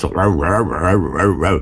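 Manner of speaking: rapid, low, far-off barking American English gabble.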